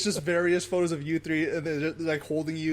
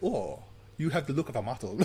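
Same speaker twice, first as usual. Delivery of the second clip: put-on, fake French accent; 4 semitones lower, 5 dB quieter than usual. Imagining a slender Frenchman recruiting someone: put-on French accent. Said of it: "I don't know what accent that was".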